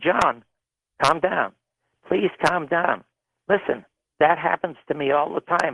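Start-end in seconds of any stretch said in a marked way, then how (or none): none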